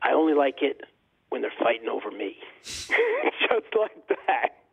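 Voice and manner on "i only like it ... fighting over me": husky voice with witty delivery. Retelling Ali's reply to his father's question, husky Muhammad Ali impression. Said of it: "his voice, you know, was really husky".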